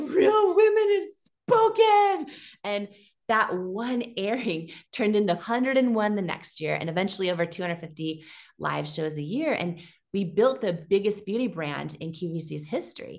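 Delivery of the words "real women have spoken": put-on very high, loud, tearful bawling cry. Retelling own words after a sellout on television: retelling own words, put-on bawling.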